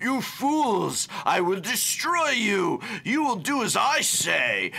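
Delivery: mustache-twirling cartoon villain voice, very high, swooping. Criticizing how a character was written, speaker mimics it: mustache-twirling villain voice. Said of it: "classic mustache-twirling villain".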